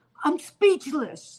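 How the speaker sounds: put-on high-pitched Brooklyn accent. Retelling what a woman said getting out of the car, in a Brooklyn accent. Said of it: "with the Brooklyn accent".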